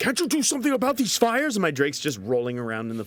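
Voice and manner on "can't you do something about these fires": shrill, very high-pitched in-character yell. Shouting in character at a pet drake rolling in flames: yelling. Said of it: "I'm yelling at my Drake".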